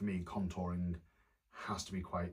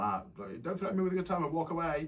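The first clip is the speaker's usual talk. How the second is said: very high-pitched, shrill shout; 10 semitones higher, 5 dB louder than usual. Retelling shouting after a man who stormed off: imitating own past shouting. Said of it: "shouting after him".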